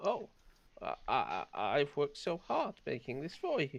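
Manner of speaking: crestfallen, let-down, disappointed, swooping voice. Voicing Drew, refused after making food for his lord: disappointed. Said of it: "looks really disappointed".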